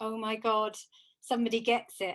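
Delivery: mock words choked out through tears. Retelling sitting on the sofa after finding a meditation: retelling own crying.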